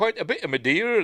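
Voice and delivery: high, loud, belted-out Bristol accent. Speaker shows how people from Bristol would talk, in a Bristol accent. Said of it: "That's how they'd be talking if they were from Bristol".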